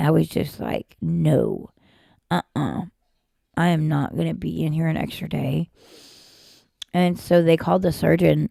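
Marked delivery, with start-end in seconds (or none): 1.0-5.7 play-acted, slow, tearful bawling through crying. Retelling refusing a longer hospital stay: imitating own crying protest. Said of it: "I started bawling, crying".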